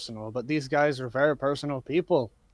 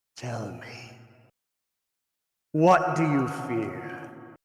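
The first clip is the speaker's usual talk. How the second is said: very slow, horrible creature voice. Voicing a cracked statue asking a player a question: horrible statue voice. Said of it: "it's this horrible voice".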